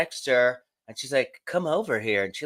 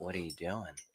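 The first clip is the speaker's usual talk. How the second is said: very low, soft, hushed, barely-there half-whisper; 7 semitones lower, 16 dB quieter than usual. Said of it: "she's, like, whispering".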